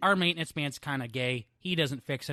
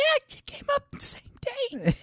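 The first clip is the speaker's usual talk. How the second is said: voice cracking and breaking, pitched very high. Mimicking the other speaker's cracking voice from the story: imitating a voice breaking. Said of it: "how your voice just broke. Like, you're like".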